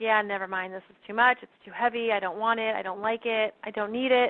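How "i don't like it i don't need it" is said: normal talking voice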